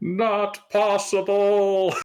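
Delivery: shrill, very high, loud shout. A character backing away from an enemy in a fight, shouting. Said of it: "I'm going to shout that".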